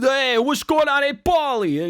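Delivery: very high, squeaky nerdy voice. Showing off the voices the speaker can do, talking like a nerd. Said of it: "I can talk like a nerd".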